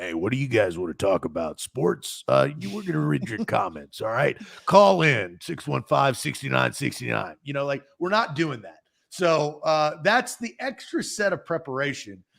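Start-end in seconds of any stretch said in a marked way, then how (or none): 0.0-7.3 low, cheesy trucker radio host patter. Co-host mocking an unprepared call-in show, in a trucker radio voice. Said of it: "that was my trucker radio voice".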